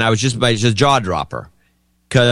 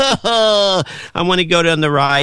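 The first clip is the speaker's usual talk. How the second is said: mock child-like whiny fake crying, higher; 6 semitones higher than usual. Showing how eight-year-olds fake cry: imitating a child fake crying. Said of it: "they fake cry".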